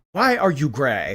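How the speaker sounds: Ugandan-accented delivery. Performing a requested line after sighing: Ugandan accent. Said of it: "In a Ugandan accent".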